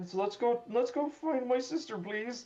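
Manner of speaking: voice suddenly goes very high. A character who just found a gun torn in half by talons speaks, voice goes very high. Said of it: "his voice just gets very h- high for a second".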